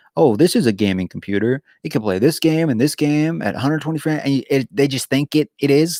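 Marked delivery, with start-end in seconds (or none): none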